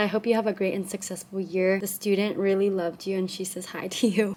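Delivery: ordinary delivery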